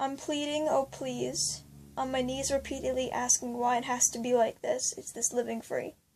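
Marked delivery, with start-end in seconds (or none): none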